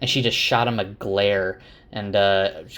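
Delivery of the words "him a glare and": normal talking voice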